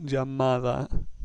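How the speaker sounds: llamada said slowly, stress on middle syllable MA.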